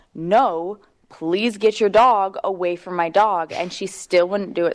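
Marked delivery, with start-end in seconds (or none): 0.2-3.5 mock nasty, slow, mean voice. Retelling what they said to another dog owner, in a mean voice. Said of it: "in a mean voice".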